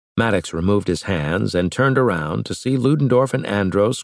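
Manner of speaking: plain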